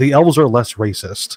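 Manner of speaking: plain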